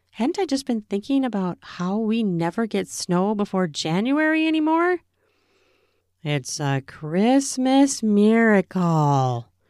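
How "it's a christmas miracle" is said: sarcastic nasal drawl, much slower. Watching snow fall before January, the narrator remarks in a sarcastic nasal drawl. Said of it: "I drawled, making my voice all nasally with sarcasm".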